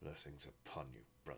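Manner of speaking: very soft, small, bitter, resentful, hushed voice. Voicing a man as he watches the players leave; small, bitter voice. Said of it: "in a small and bitter voice goes".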